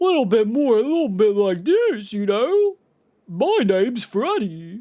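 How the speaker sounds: weird, sing-song character voice with swooping pitch. Suggesting how the character should sound, in a weird Freddy voice. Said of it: "a little more weird factor in his voice".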